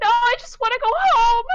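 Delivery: shrill, very high, very loud sobbing, crying scream. Retelling a game where the player shoots her with arrows, mock screaming and crying. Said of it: "She is screaming and she's crying".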